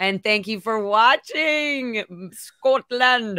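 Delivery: slow, high, put-on Scottish accent. Thanking a viewer watching the stream from scotland, in a scottish accent. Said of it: "I don't know why I did that accent".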